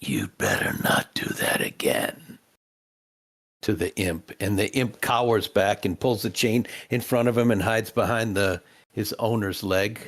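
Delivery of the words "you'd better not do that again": deep, utterly calm, very low voice. Voicing Grimm speaking to the imp, in Grimm's very calm voice. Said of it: "says in a very calm voice".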